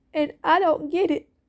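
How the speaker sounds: emotional, grieving voice, pitched high. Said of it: "I'm sorry that I'm getting emotional".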